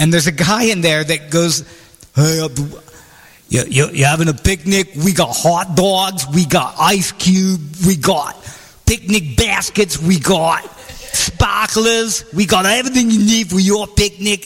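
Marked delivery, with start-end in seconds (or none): 2.2-14.5 botched accent attempt, spoken much slower. Retelling a store ad heard while driving, imitating the One-Stop Market ad guy's accent. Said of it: "I can't do the accent right".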